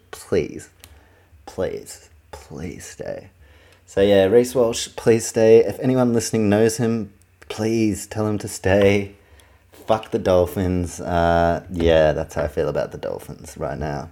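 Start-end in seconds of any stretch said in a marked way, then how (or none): 0.1-3.3 hushed, desperate, begging whisper. Acting out a voice message begging a player to stay, mock-desperate pleading. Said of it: "with like a desperate voice message".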